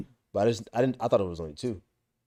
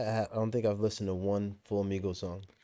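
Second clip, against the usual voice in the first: ordinary delivery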